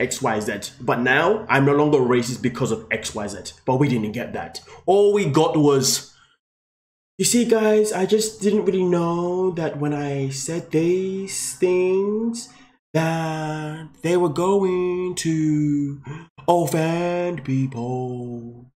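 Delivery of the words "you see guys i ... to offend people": very slow, dragged, drawn-out, unhurried speech. Quoting what she said instead of an explanation: imitating her very slow talk. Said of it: "I'm only talking like that because ... she talks very slowly".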